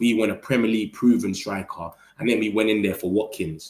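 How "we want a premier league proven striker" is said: ordinary delivery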